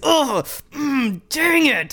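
mock very slow, high, unconvincing angry grunting. Retelling a wrestler's backstage reaction to losing titles: imitating Tomko's unconvincing angry grunting.

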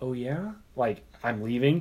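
slow, disappointed, sad-voiced delivery. Retelling a woman's reply on hearing the speaker is leaving, imitating a sad voice. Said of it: "with sadness in her voice".

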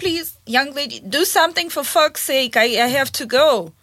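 ordinary talk

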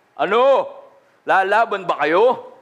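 deep bass, taunting giant voice. Retelling the Bible story, the speaker voices Goliath's challenge in a deep bass voice. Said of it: "hinahamon ni Goliath with a deep bass voice".

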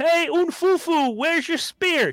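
very high, drawn-out, mocking, taunting holler. Retelling teasing a girl from a window: retelling a yell out the window. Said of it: "So I'm yelling out the window".

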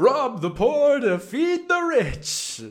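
put-on voice, very loud, belted high and shrill. Discussing a movie, quoting a character's line in a Prince John impression. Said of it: "That's not a very good Prince John".

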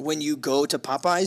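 normal talking voice

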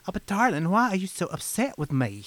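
high, fancy little debutante voice. Showing the fancy voice the speaker uses until she says stop: little debutante voice. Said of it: "like a little debutante voice".

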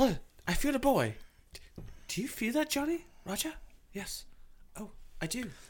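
high, mock British medium voice.

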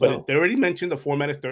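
voice cracking and breaking. Giving news details when the voice suddenly breaks: voice cracking. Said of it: "that was a break in the voice".

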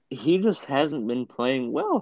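high voice cracking mid-sentence. Discussing a basketball player's recent poor play, voice cracking. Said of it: "Voice crack".

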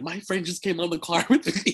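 high, screamed out call. Retelling a car ride with Jalissa snapchatting in the back: imitating Jalissa screaming.

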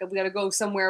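ordinary delivery

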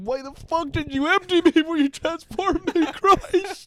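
put-on very high, very loud, frantic panicked cry. Acting out a transformed guy begging to go back: imitating a panicking, upset guy. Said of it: "He's just panicking and he's so upset".

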